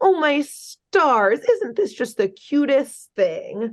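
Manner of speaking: high, little put-on baby voice. Retelling how a character spoke to children, in a little baby voice. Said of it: "Major Glory puts on this little baby voice".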